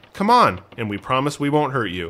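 ordinary delivery

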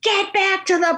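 mock very high-pitched, imposing, booming scream. Retelling how a man screamed from the bench, retelling a scream. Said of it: "he's screaming".

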